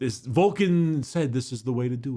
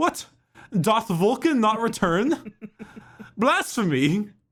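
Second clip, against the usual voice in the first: put-on very high, archaic, old-timey knight voice; 9 semitones higher than usual. Speakers joking about how characters would talk, in a put-on archaic voice. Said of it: "imagining them with that voice".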